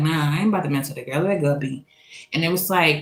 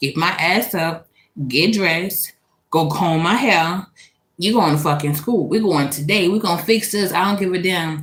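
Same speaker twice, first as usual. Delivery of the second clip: ordinary talk, nothing marked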